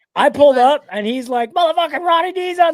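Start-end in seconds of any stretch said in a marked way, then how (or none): 1.6-2.8 wild, full-throated, high, top-of-the-lungs screaming. Retelling how a friend greeted the car arrival: imitating someone screaming. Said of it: "screaming at the top of his lungs".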